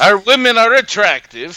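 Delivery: very high-pitched put-on Swedish accent. Podcast host, asked to do a Swedish accent, talking about Swedish women, in a Swedish accent. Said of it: "Can you do a Swedish accent?".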